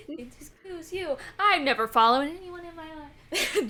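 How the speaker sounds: volume rising then fading. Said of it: "starts getting picked up".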